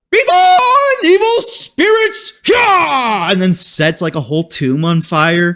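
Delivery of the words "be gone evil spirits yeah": full-on goofy hammy cry, pitched very high. Retelling a moment that had everybody in the theater laughing, imitate him in a full goofy put-on voice. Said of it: "he's going to go full goofy".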